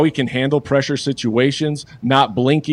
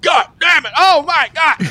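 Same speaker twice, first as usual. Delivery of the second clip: put-on very high, drawn-out screech of pain; 3 dB louder than usual. Retelling a coach getting zapped by a prank: imitating someone screaming in pain. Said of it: "just screaming like crazy".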